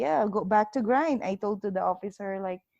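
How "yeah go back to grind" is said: imitated, put-on sarcastic tone. Showing how they answer back when correct: retelling a sarcastic reply. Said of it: "I will answer you back, like, sarcastically".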